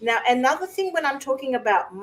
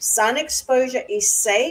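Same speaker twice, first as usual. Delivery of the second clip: ordinary talk, nothing marked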